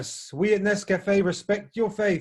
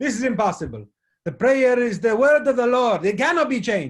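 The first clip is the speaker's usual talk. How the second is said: put-on Italian accent; 4 semitones higher than usual. Telling a story, voicing the Pope's reply in an Italian accent. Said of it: "Is that a good enough Italian accent?".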